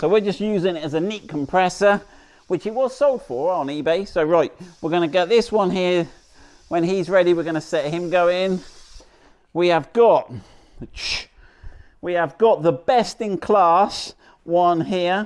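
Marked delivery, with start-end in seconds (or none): 9.5-15.3 heavy sarcasm, said very slowly, boastful. Showing a compressor that was sold on eBay, sarcastic. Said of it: "Note the sarcasm in my voice there".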